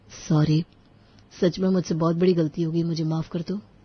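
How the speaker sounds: plain reading voice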